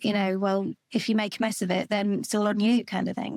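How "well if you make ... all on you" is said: usual speaking voice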